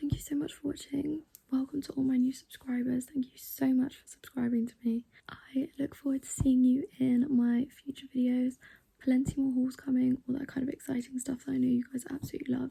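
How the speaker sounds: hushed whisper. Late at night, a vlogger thanks viewers and new subscribers, whispering. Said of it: "I'm also whispering because it's really late".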